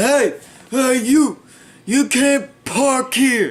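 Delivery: put-on loud, high, screaming drunk yell.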